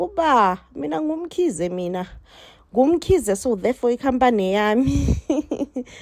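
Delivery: mock biting sarcasm, mocking tone. Retelling a drama scene where Gcwabe claims the company: imitating Gcwabe being sarcastic. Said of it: "being sarcastic and all that".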